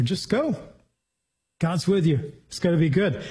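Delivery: mock, put-on sarcastic tone. Paraphrasing the prophet's answer to the king, imitating a sarcastic reply. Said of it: "sarcasm here".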